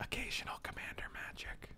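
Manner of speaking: very hushed whispered aside. Echoing the other speaker's words about playing Magic: whispering. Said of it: "Why are we whispering?".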